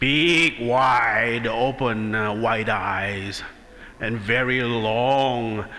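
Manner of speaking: put-on angry troll voice. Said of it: "he sounds like a leprechaun".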